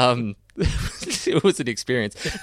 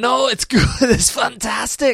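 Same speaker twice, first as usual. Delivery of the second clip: put-on Scottish voice, higher pitch; 13 semitones higher, 4 dB louder than usual. Trying a Scottish impression on the spot: Billy Connolly impression. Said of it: "my only real Scottish impression that I have in me is actually Billy Connolly".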